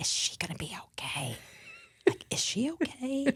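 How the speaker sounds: soft, hushed whisper. Retelling overhearing him upstairs on the phone: imitating someone whispering. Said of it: "on the phone whispering".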